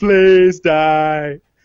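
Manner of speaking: play-acted loud tearful begging, die stretched. Retelling stabbing a turtle over and over: imitating own crying plea. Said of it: "just crying, just like".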